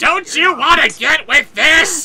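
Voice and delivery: mock sexy, raspy comedian voice. Performing a requested voice suggestion: sexy Gilbert Gottfried voice. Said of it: "Just make Gilbert Gottfried sound sexy".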